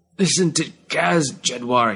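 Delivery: slow, gasping words between breaths. Garkofan, struck by the blade, speaks to jedwar, gasping. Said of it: "he gasped".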